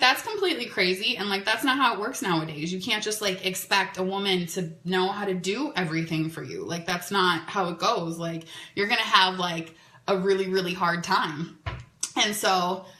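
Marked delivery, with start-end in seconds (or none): none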